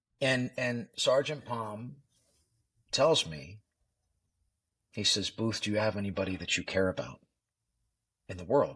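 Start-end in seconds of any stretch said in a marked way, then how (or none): none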